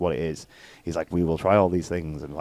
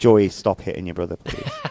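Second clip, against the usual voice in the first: ordinary delivery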